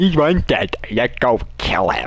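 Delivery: mimicking voice, mocking. Mimicking the other player's last line back at them: mocking imitation of other player. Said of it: "You sound so".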